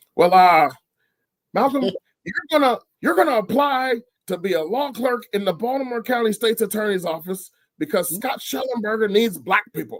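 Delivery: very high-pitched, gruff voice. Recounting what the professor said while you were editing his book, imitating Professor Higginbotham's gruff voice. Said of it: "he had this really gruffy voice".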